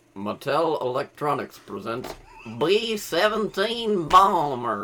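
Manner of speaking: robotic synthesized voice. Discussing an old game console voice module, imitating its announcement; Intellivoice synthesizer impression. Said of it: "That's a spot-on impression".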